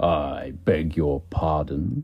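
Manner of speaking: deep, low, slow growl. Reading a story aloud, Percy begs pardon in a deep, growly voice. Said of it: "he said in a deep, growly voice".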